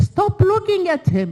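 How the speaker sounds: put-on high, loud screaming. Speaker recalling two people both screaming at them, imitating someone screaming. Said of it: "both screaming at me".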